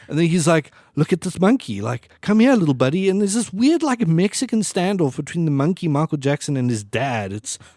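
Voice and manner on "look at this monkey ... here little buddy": mock thrilled, eager, coaxing voice. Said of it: "Michael's so excited".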